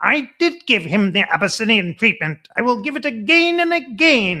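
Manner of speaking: screechy, high, loud voice. Retelling Roosevelt's reply to a Standard Oil man; screechy, high Roosevelt voice. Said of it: "in this very screechy, high voice".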